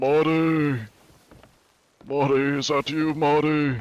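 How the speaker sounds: put-on out-of-breath, slow, high old man voice, name dragged out. Showing the old man voice he keeps for disguises: old man voice. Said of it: "my old man one".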